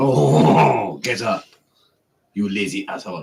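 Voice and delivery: put-on French accent. Joking about what the referee should have said, in a French accent. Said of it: "in a French accent".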